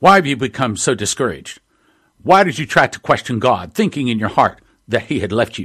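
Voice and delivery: acted, very stern voice. Retelling what a powerful voice said to him: retelling a very stern voice. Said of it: "spoke to me very sternly and said".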